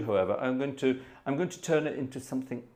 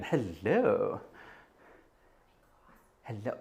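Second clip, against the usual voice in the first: low, flirty, each "hello" stretched out; 4 semitones lower, 5 dB quieter than usual. Saying hello to Jez in a Leslie Phillips impression. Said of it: "I'm gonna get all Leslie Phillips again".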